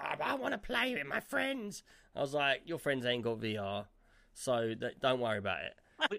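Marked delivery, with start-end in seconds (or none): 0.0-1.8 very high-pitched, really upset, distressed voice. Retelling how Leo reacted when a game was chosen, imitating upset Leo. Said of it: "Leo got really upset".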